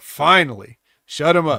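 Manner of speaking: plain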